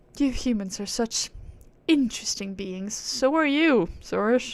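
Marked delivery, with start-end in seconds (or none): 0.2-3.0 put-on posh, upper-class aristocratic British accent. Voicing a high and mighty game character: British aristocrat accent. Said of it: "give her a British accent like the fucking aristocrats".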